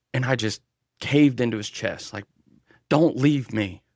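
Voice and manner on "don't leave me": mock crying voice, slower. Recounting a dream where they caved into his chest, re-enacting a crying plea. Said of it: "he seen that I was crying".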